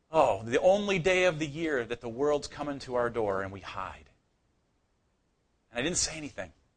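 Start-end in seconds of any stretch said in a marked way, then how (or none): none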